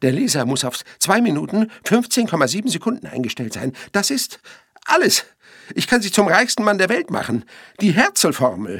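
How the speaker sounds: high shrieking scream with pitch climbing. Blackburn speaks to Shaft; screaming. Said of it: "schrie Blackburn".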